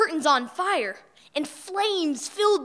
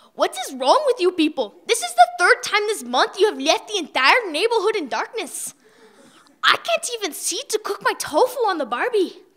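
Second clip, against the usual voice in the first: indignant, mad, fed-up ranting; 3 semitones higher, 4 dB louder than usual. The neighbor Eddie confronts the family in the dark street, mad. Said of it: "we could tell our neighbor [name] was mad".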